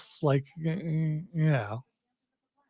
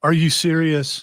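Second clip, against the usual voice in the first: ordinary talk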